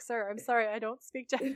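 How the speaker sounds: really polite, courteous, respectful delivery. Retelling an episode scene to others, imitating Sam Winchester being polite. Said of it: "he's really polite".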